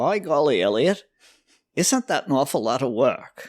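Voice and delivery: put-on New England Maine accent. Retelling Berwin's remark while the speaker chopped stump roots, in a Maine accent. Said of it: "in his Maine accent".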